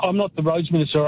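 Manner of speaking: plain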